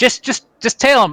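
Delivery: shrill, very high cry, tripping over words. Game master voicing a gnome the player Schmidt sees, crying out. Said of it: "you hear him cry out".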